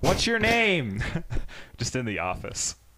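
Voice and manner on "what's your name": high-pitched, slow yelling. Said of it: "she's like".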